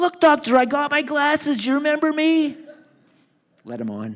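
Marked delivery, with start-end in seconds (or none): 0.0-2.6 very high, loud shrieking scream. Retelling how a man on the dock screamed at the boat: imitating someone screaming. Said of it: "Harry's screaming".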